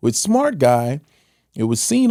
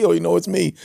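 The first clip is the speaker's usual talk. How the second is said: put-on laughing speech, higher; 6 semitones higher than usual. Retelling a kid laughing at an audition: imitating someone laughing while talking. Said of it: "He starts laughing like".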